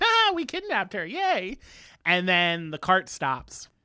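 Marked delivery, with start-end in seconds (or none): 0.0-1.6 very high, swooping, sing-song, mock-proud, smug gloating. Retelling a story, the speaker acts out the kidnappers riding along, mock-proud gloating. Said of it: "They're all proud of themselves".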